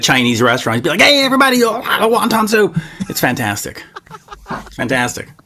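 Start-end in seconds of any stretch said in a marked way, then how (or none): 1.0-2.8 pitched-up radio announcer patter. Retelling how a friend does a radio show at a Chinese restaurant: imitating Jeremy's radio voice. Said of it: "having Jeremy do his radio show".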